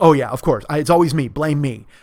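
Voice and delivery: mock sarcastic angry yelling. Retelling a fight at a baseball stadium, retelling a woman's sarcastic angry yell. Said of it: "but you're yelling".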